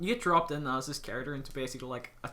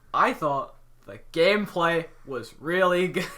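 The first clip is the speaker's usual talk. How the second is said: loud, mocking, sarcastic tone; 3 semitones higher, 5 dB louder than usual. Asked for an opinion on the game during a podcast; sarcastic. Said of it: "You sound so sarcastic when you said that".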